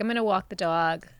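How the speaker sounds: New York Long Island accent. Answering a request for a good Long Island accent: Long Island accent. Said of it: "Can you give us a good Long Island accent?".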